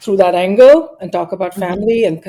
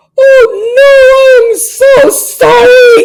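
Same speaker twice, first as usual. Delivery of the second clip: mock very high, very loud, very slow crying wail; 9 dB louder than usual. Retelling a phone call from the editor Nick, retelling a crying apology. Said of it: "And I start crying".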